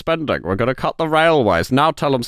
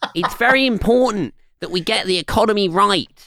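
put-on small-child politician voice; 7 semitones higher than usual. Talking about his impressions, the speaker does a childlike Rishi Sunak impression. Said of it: "imagine him like tugging at your skirts and looking up at you".

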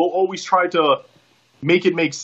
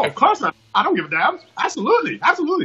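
bad put-on Australian accent, high, swooping, sing-song; 9 semitones higher than usual. Retelling Emma's answer when asked if she's okay putting over Scarlett, imitating Emma's Australian accent. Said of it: "in her Australian accent, I don't have a good Australian accent".

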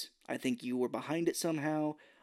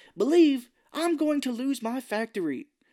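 very high-pitched, loud, shrill shouting outburst; 10 semitones higher, 7 dB louder than usual. Retelling how a man yelled at cj in the car, retelling a yell. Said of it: "He's like yelling at CJ".

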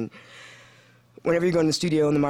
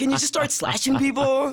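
high, loud, exasperated outburst. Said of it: "I'm like".

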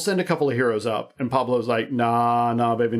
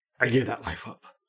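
mock grand, theatrical, overly dramatic and weighty; 5 dB quieter than usual. Retelling a character's line refusing to rejoin the heroes: imitating a dramatic line. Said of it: "very dramatically".

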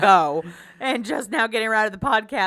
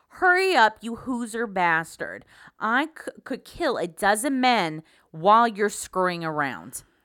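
heavily nasal, laid-on put-on Midwestern accent. Acting out a character in a told story, nasal midwest accent. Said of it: "let me get my nasal back in like I'm from the Midwest".

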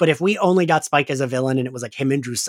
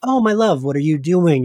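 soft put-on vampire voice; 3 dB louder than usual. Retelling how Spike talks when Drusilla enters: softened Spike voice. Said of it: "he softens and he's like".

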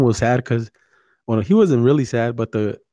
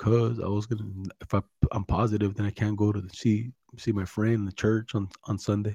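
put-on sadness, much quieter; 2 semitones lower, 9 dB quieter than usual. Speaker retells what his friend said when asked why he was sad, imitating a sad friend. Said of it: "he is like all sad".

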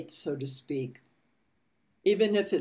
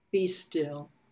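slow, meditative reading with long pauses between phrases. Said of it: "I'll read it slowly".

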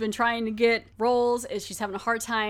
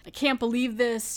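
mock-angry, put-on angry ranting. Retelling a story, the speaker acts out a woman going off on Joyce, acting out being mad. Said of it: "and she's all mad".

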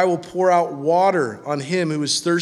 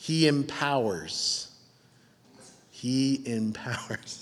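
very quiet, slow, low, deliberately paced; 4 semitones lower, 9 dB quieter than usual. Speaker to note-taking listeners in a sermon, saying each point slowly. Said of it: "I'm going to say these slowly".

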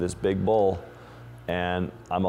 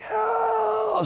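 very high, long-held, drawn-out acted shriek. Recounting an attack on the beach, retelling a scream for help.

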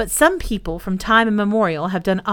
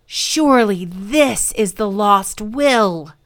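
eager, excited, deliberate exclaiming, drawn out. Pelham finds a parchment folio among the papers, exclaiming excitedly. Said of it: "exclaimed excitedly".

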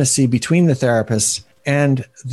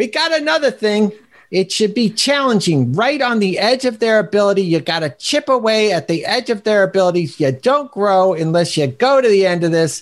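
put-on pitched-up, sleazy lawyer voice with Bronx accent; 7 semitones higher than usual. Speaker explaining tasks, slipping into a Bill Burr-ish shyster Bronx lawyer voice. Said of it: "shyster lawyer from the Bronx or something".

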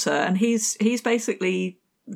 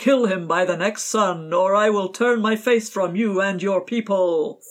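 booming, thundering God voice from above; 3 dB louder than usual. Retelling a story where God gives an ultimatum, thundering voice of God. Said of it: "this voice thunders out".

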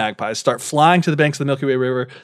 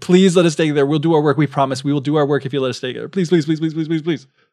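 put-on pleading, mock begging. Storyteller retelling how they beg the God of Heaven to let them stay, imitating pleading. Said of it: "they like start begging".

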